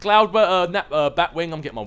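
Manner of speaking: rushed, tongue-tied rambling, tripping over words. Mid-explanation, running through names, talking fast and tongue-tied. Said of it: "I need to stop talking so fast".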